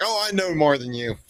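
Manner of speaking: put-on cocky, swaggering tone. Describing what kills an interview: imitating a cocky candidate. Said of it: "Old cocky swagger".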